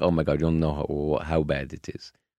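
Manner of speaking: ordinary talk, nothing marked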